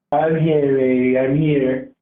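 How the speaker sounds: very deep, very low, clumsy, badly faked voice. Calling in to a stream, passing as Donald Trump: bad Donald Trump impression. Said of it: "Your impression is really bad".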